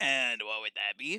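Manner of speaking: full-on low cartoon pirate voice. Reading a story aloud, the narrator voices a character's question in a SpongeBob pirate voice. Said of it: "the most SpongeBob pirate voice I've ever heard".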